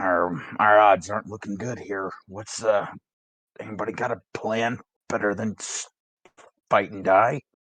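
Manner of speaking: muttered under the breath, in character. Voicing a character speaking to the group: muttered under his breath. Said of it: "more under his breath towards the group".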